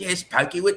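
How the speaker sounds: high-pitched British accent. Recalling a bit done at about age seven, as the Crocodile Hunter in a British voice. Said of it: "Crocodile Hunter in a British voice".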